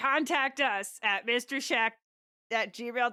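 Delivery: put-on gruff old-man character voice. Asked by a co-host to read out the contact email, Grunkle Stan voice. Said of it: "In your absolute best Grunkle Stan".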